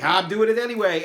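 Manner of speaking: high, loud, defiant tone.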